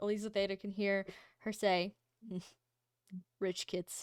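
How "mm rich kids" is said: whispered, grumbled mutter under the breath. Narrating a game scene, voice a character speaking this under her breath. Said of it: "under her breath".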